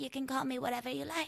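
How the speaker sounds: put-on, vague French accent. Talking about a woman's old accent, imitating her old vague accent. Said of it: "When she would be like".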